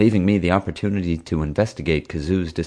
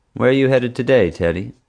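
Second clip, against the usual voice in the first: suspicious, distrustful, probing tone; 4 semitones higher, 3 dB louder than usual. Darlene, the guard, questions Teddy as he walks in; suspicious question. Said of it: "she asked suspiciously".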